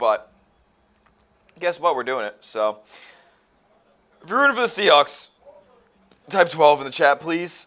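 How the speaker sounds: hiccuping while talking. Asking viewers to type twelve in the chat, hiccuping while talking. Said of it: "You're gonna see me literally hiccuping on camera".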